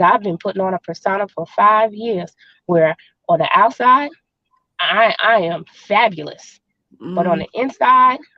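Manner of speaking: normal talking voice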